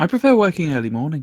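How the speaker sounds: strong, full Liverpool accent. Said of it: "sound like you were from the Beatles".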